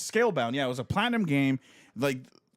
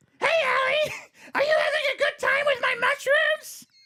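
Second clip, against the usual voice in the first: very high, tiny little mushroom creature voice; 4 dB louder than usual. Describing a tiny mushroom man who follows you around, the speaker voices him: tiny mushroom man voice. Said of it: "And he sounds like this".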